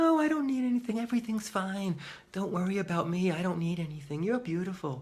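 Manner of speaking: very high, exaggerated, syrupy sugary sweetness. Acting out a deferred need that sugars over: put-on syrupy sweet voice. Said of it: "Syrupy sweet".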